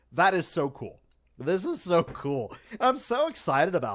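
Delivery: hyped, swooping voice bursting with excitement. Reacting to a favourite shot with the Mosasaur: hyped excited voice. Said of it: "if you can't tell in my voice how hyped I am".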